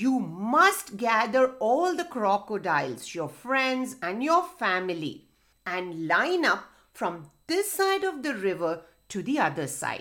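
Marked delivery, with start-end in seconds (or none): none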